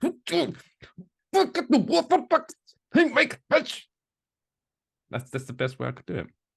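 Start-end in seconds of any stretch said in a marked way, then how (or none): 0.0-3.9 strained, holding back pain, very high, very slow, drawn out. Showing how a shop greeting sounds after hitting your thumb with a hammer: holding back pain. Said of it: "hit your thumb with the the hammer".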